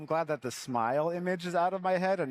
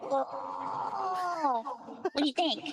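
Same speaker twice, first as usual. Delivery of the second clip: very high, very slow, shrill, drawn-out death growl. Answering a request to perform a line: death metal growl. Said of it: "best death voice".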